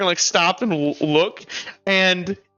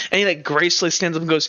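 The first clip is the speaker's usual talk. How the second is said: plain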